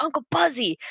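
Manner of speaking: play-acted high yelling. Retelling a scene where a character calls for her uncle: imitating a character yelling. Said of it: "and then she yells at him".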